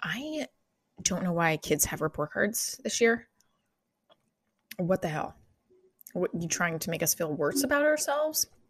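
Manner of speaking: soft voice brought down low, hushed. A parent talking to listeners, in a lowered voice. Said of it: "I'm lowering my voice now".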